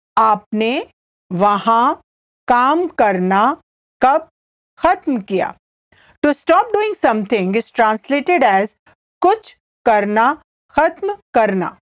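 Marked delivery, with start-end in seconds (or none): 0.1-5.5 slow, careful, halting delivery broken into phrases. Repeating a Hindi translation again for the listener: slowly. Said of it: "I'll say it again slowly".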